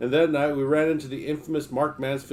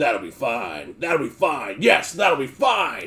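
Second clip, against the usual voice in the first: thunderous bellow with big swooping pitch; 4 dB louder than usual. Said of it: "just slamming away and bellowing".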